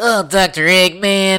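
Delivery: high, loud, nasal cartoon voice. Mocking a version of Sonic they never liked, calling out Dr. Eggman in a nasally Sonic voice. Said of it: "when he sounded all nasally".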